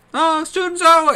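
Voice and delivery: very high, loud poltergeist shouting voice.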